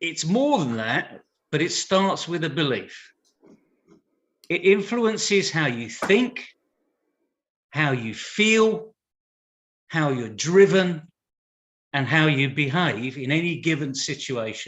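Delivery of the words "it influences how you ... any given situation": measured, unhurried, slow, every word weighted. A speaker explaining how a belief about yourself shapes you, speaking slowly. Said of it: "I said that slow enough".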